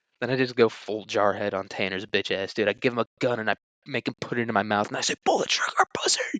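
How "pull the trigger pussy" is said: mock unhinged, crazed, raging fury. Imagining going crazy on a kid in class: put-on crazed rage.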